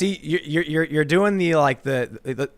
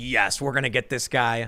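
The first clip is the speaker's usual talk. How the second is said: ordinary delivery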